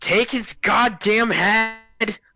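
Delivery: shrill, very high, very slow, drawn-out scream. Voicing a character fighting a machine: screaming in character. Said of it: "He just screams".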